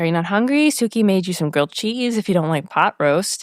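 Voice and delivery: ordinary talk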